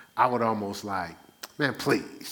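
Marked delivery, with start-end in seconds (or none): 1.5-2.3 put-on cocky, in-your-face, defiant tone. Retelling how he brushed off people who pushed him: imitating his own defiant retort. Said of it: "everything had to be a please, and, like, defiant".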